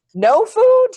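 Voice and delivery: very high, loud, baffled, puzzled voice. Voicing a kitchen character calling after someone leaving: confused. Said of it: "she's confused".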